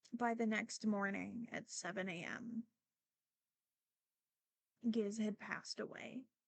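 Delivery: struggling not to cry mid-sentence. Telling how the family's guinea pig died overnight, holding back tears. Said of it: "I'm currently fighting crying again".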